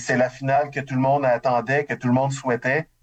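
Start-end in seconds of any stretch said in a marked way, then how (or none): none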